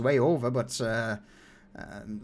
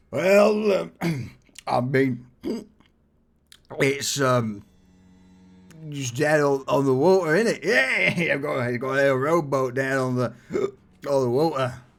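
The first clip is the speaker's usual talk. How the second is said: put-on slurring drunk voice, louder; 5 dB louder than usual. Voicing a stranger offering a boat ride: drunken slurred voice. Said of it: "a drunken, slurred voice".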